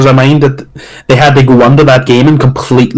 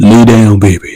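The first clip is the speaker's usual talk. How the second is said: close-mic radio announcer impression, much lower; 4 semitones lower than usual. Remembering a radio station's announcer, doing a close-to-the-mic radio announcer impression. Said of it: "The announcer would get really close to the mic".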